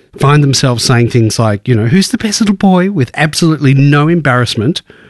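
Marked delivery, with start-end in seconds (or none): 1.9-2.9 doting, high-pitched pet talk. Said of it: "The voice goes into this high pitch".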